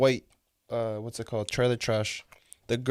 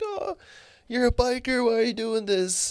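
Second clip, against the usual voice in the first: very high, tearful, sobbing put-on pleading voice; 12 semitones higher than usual. Retelling what a crying bum said to the guy handling him, imitating someone crying. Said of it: "The bum's like crying for his life".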